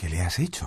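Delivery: whispering. Harry speaks to Hermione while Neville lies frozen on the floor, whispered. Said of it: "susurró Harry".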